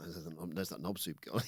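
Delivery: mock whispering. Imagining the three people at the gym talking about the other speaker: imitating people whispering. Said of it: "Were they whispering".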